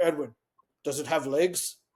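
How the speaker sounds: rumbling, growly voice. Recounting lunches with Paul, quoting his question; Paul's growly, rumbly voice. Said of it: "in this really kind of like growly, rumbly voice".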